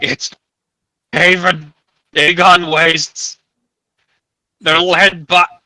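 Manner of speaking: words gurgled up through the throat. Narrating a scene, voicing a man who is gurgling out words. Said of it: "He gurgles out".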